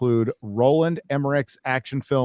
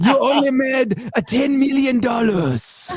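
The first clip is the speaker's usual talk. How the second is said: terrible put-on Chinese accent, very high pitched; 11 semitones higher than usual. Redoing a joke line imagined from china: bad chinese accent. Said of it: "I wanted to say".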